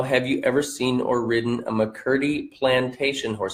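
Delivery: ordinary delivery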